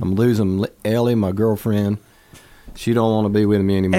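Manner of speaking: ordinary talk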